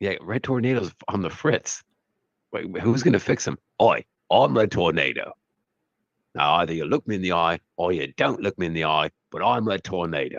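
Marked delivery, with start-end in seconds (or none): 3.8-10.4 put-on British actor voice. Imagining Red Tornado played by a film star, doing a Michael Caine impression. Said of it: "Played by Michael Caine".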